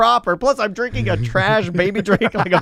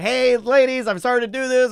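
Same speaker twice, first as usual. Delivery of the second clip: chirpy, cheerful voice, pitched higher; 3 semitones higher than usual. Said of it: "I'm going into full chirp".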